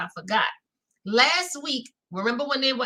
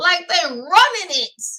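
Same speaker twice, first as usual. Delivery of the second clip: ordinary talk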